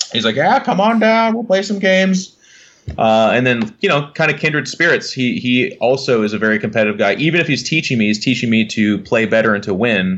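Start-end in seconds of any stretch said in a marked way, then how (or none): 0.4-2.4 put-on crotchety old voice, pitched much higher. Recalling first asking a local gaming store about Warhammer, imitating Reese's crotchety old voice. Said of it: "this crotchety old voice".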